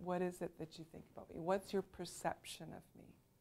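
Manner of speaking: soft, very quiet, breathy near-whispered speech. Speaker teaching about voice loudness asks the listeners' perception, speaking quietly. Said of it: "when I speak quietly".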